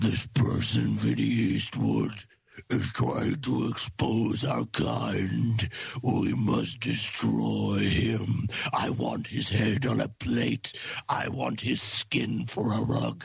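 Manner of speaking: very low, very slow, stretched evil villain voice. Imagining a secret-society leader targeting Vinny Eastwood, in a put-on evil David Rockefeller voice. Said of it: "go in his evil Rockefeller voice".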